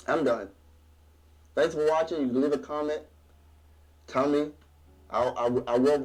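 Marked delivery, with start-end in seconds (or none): 5.1-6.1 stuttering, stammering delivery, much slower. Speaker signing off a video, thanking viewers, stuttering. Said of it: "I'm stuttering".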